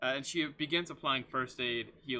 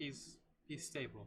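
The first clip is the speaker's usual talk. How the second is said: very quiet, hushed, almost under the breath; 10 dB quieter than usual. Game narrator voicing a girl who has just finished working on Solomon: very quiet. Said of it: "very quietly".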